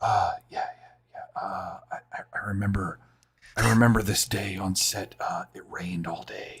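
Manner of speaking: hushed, rambling, whispered commentary-style voice. Imitating a director's commentary track, whispering in your ear: imitating Mel Gibson whispering. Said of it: "he's, like, whispering to you".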